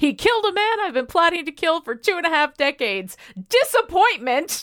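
crazed villain yelling. Retelling a character yelling at Coulson on the football field: imitating Cal yelling. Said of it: "he's just yelling at Coulson".

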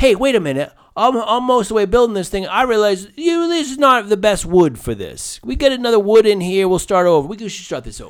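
loud, shrill, blaring, badly done Jersey accent. Doing a bit about building something, in a bad Jersey Long Island accent. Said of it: "kind of a bad Jersey-ish Long Island accent".

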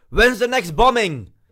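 very high, very loud, jeering shouted yell. Retelling a heckler calling out at the end of a set: imitating a heckler shouting. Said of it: "he just shouts out".

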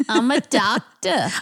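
best-effort put-on New York accent. A guest answers the host's question, doing a New York City accent. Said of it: "Doing my best New York City accent".

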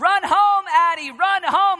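acted top-of-the-lungs shout, drawn out, pitched high. The speaker recalls yelling to Addie rounding third base at kickball, retelling a scream. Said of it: "I scream at the top of my lungs".

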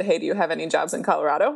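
put-on playful, joking tone. Retelling asking the company shipping their prize gear about jobs, retelling a joking question. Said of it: "I just jokingly said".

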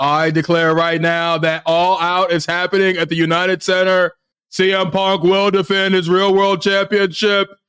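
pompous small-town mayor announcer voice. Admitting his version sounds like someone else, a wrestling podcaster does a Tony Khan impression. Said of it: "my Tony Khan sounds like Mayor Quimby".

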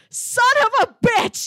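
drawn-out, shrill, very loud full-lung bellow. Retelling how he yelled in the empty woods, retelling a full-lung yell. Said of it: "I still yelled".

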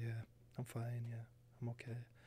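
hushed, very quiet, small, barely-there voice. Showing how the speaker talks after getting really quiet: imitating own quiet talking voice. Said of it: "I'll start talking like this".

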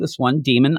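usual speaking voice

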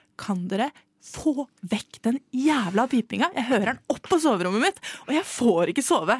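furious, fed-up, angry scolding. Recalling going over to complain to the shop, retelling own angry scolding. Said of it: "Da gikk jeg bort og kjefta og var bare sånn".

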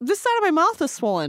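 high, loud, urgent squeal. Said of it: "I didn't say it like that".

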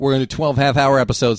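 ordinary delivery

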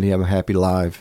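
ordinary delivery

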